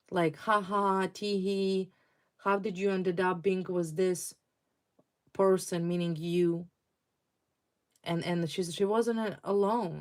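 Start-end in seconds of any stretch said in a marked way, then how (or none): none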